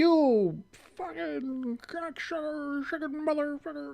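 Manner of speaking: mock very high, drawn-out, heated angry cursing. Retelling cursing at the Cowboys from a bar step: imitating own angry cursing. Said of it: "cursing at the Cowboys like".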